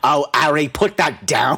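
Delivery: slowly stretched-out outburst. Imagining Hagrid catching Harry in the act: Hagrid voice. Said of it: "I can just imagine him just being like".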